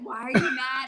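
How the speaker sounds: normal talking voice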